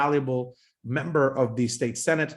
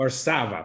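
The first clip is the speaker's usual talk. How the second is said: Varsava with stress on second syllable sa. Introducing a guest's surname to listeners: stress on second syllable of Varsava. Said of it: "So put the accent on the second A".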